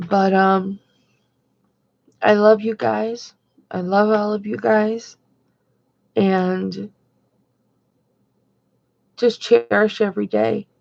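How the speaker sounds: having trouble getting words out. Speaking to viewers about Kim, struggling to get words out. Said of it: "sorry it's taking me so long to get my words out".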